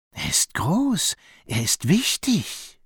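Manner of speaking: hushed, slow, high half-whisper. A snake half-whispers to her horned companion about the elephant in his way. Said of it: "flüsterte".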